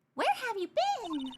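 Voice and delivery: very high-pitched, cross put-on character voice. Voicing a woman who looks mad: put-on high-pitched voice. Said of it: "I'm gonna give her a higher pitch voice".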